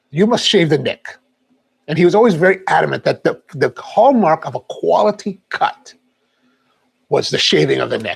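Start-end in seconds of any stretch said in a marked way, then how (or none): 0.1-1.1 thick, heavy, laid-on put-on Italian accent. Retelling what the man shaving his neck always said, heavy Italian accent. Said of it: "with a heavy Italian accent".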